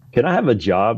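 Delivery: ordinary delivery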